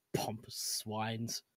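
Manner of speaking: muttering under breath. Player reacting in character to the group, muttering under breath. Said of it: "under my breath mutters".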